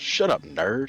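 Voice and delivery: mock irritated, snappish tone. Quoting a scene from a show to a friend: imitating an irritated retort. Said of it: "gets irritated that he even said it".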